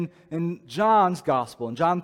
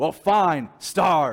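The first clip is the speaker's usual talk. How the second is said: angry, sharp outburst thrown out in anger. A parent whose kids won't eat their dinner, doing the Beast impression. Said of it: "do my best Beauty and the Beast impression".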